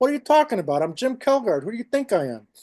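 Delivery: put-on thick New York accent. Retelling how the guy at the door let him in, thick new york accent. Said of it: "I laid my New York accent on thick".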